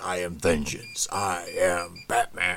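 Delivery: big, deep, slow, drawn-out growl. Describing an actor's audition, the speaker does a deep Batman growl. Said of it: "that big, deep growl".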